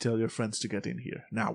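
soft, stern, authoritative, commanding voice. Game master voicing an authority figure behind a counter, commanding tone. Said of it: "there's a commanding tone to his voice".

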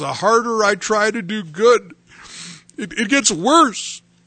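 upset, high-pitched, tearful crying voice. Retelling what an upset inmate in county jail said: imitating a man crying. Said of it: "he was crying, he was really upset".

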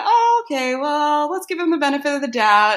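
high, bright, patient, indulgent voice.

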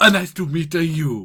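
slight put-on Italian accent and lilt. Trading greetings with someone new, slightly Italian-sounding accent. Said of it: "Sound a little bit Italian".

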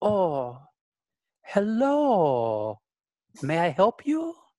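slow, drawn-out delivery with swooping tune. Voicing a tall slender woman greeting customers: Madame Trousseau voice. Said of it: "slender woman who says".

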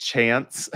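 chance pronounced the American way. Pronouncing a word as he would in the U.S.: American accent on chance. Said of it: "As I would say in the U.S".

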